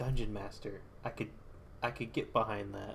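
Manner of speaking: ordinary talk, nothing marked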